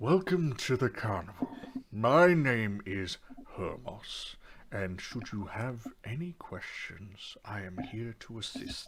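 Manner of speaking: calm, measured, businesslike. Narrating a role-play, voicing the man who just took the players' money: cool, slow and deliberate. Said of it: "his demeanor is is quite cool, slow, and deliberate".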